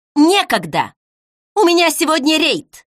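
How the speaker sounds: high, loud, snapping retort. Svetlana, running out of the room as her mother calls after her, snapping. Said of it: "огрызнулась Светлана".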